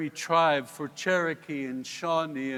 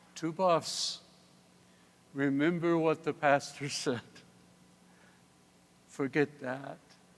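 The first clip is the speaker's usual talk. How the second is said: put-on soft, mild, gentle elderly woman's voice. Retelling what their grandmother told them, imitating her soft, gentle voice. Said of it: "in her soft, gentle voice".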